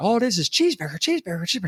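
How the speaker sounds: high, fed-up, exasperated yelling rant, half to herself. Retelling a sketch where Jill rants behind the counter: imitating Jill Clayburgh yelling to herself. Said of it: "yelling to herself".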